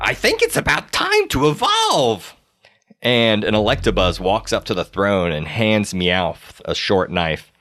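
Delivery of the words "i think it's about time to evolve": cackling, high and swooping. Storyteller voicing Meowth watching the fight below, cackling Meowth voice. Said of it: "Meowth sees it and he's he's continuing to laugh and cackle".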